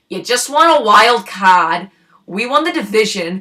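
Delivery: put-on Boston accent, dropped r in card. Retelling what a woman said to them after the Jays won: Boston accent. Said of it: "say to us in her Boston accent".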